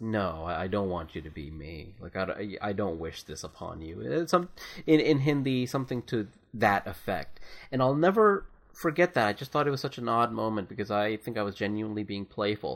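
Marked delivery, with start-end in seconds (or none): 0.0-4.0 put-on low, soft, pleading, exhausted voice. Retelling what a tired worker said to a playful kid: imitating a pleading, exhausted voice. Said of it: "almost pleading and exhaustive voice".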